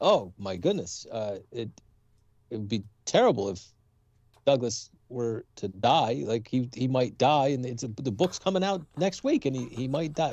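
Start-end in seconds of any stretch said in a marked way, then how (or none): none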